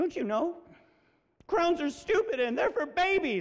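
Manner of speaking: put-on little girl voice, high, fighting back tears. A father retells his daughter's words, imitating Maddie holding back tears. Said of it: "she's trying not to cry".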